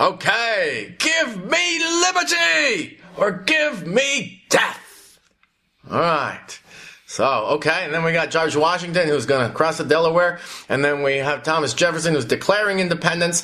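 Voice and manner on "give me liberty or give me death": very slow, high, impassioned, passionate rallying yell. After asking someone to yell it, demonstrating the line themselves: yelled with passion. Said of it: "now you gotta yell it".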